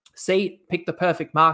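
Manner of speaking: ordinary delivery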